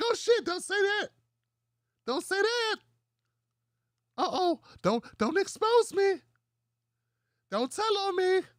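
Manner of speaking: put-on squeaky, very high, little-kid voice. Mocking how Doctor Jason's voice went higher, imitating Doctor Jason as little kid. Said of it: "voice get higher? Yeah, yeah, like a little kid".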